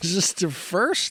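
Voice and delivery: high-pitched, giggling, laughing through the words. Reading out a news item while trying to stop laughing: laughing while talking. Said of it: "I gotta stop laughing".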